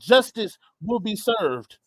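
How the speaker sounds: plain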